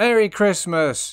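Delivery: very loud, high festive shouting. Asking to shout a greeting, then doing it: shouting merry christmas. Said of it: "Can I shout out Merry Christmas?".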